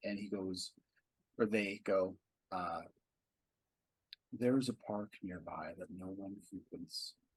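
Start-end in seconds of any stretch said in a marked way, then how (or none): 4.3-7.1 soft, calm, serene androgynous voice. Voicing a monk who offers a quiet place: serene androgynous voice. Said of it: "he says in a serene voice".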